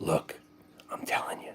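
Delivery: very quiet, dead-serious, confiding hushed whisper. Retelling an interview, imitating Jim Cramer whispering. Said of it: "Cramer gets the whisper voice on".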